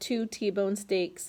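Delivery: ordinary delivery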